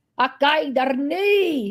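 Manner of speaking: Scottish and Belfast blended accent. Asked to do it one more time, giving a mixed Scottish and Belfast accent. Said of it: "mixed with Scottish and Belfast".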